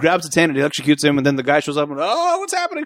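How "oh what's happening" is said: overacted bewildered put-on voice, higher. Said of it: "everybody's overacting this entire movie".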